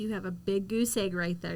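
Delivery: normal talking voice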